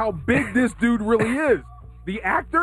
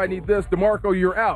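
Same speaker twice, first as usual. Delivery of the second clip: ordinary talk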